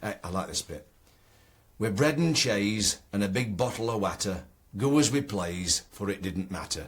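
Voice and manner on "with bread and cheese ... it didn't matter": Ilkeston local speech. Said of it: "written in the Ilkeston dialect".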